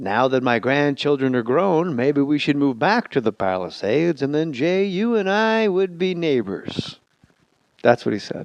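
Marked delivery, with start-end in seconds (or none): 0.0-7.0 play-by-play announcer voice. Retelling meeting an announcer: imitating Vin Scully's play-by-play voice. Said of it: "Vin Scully talking to you in play-by-play voice".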